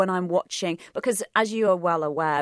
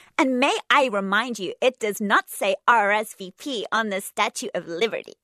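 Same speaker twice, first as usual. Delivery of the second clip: attempted, put-on stateside American accent; 4 semitones higher, 3 dB louder than usual. Asked by the others to do an American accent, the speaker says the phrase: American accent. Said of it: "Carly doing an American accent".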